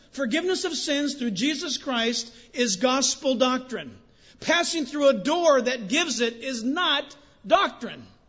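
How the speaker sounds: loud emphatic yell. A speaker addressing listeners, so excited they end up yelling. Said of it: "I'm yelling again".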